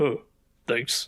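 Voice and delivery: play-acted, really blunt, no-frills tone. Retelling a scene where praise gets answered in a really blunt tone. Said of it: "in a really blunt tone".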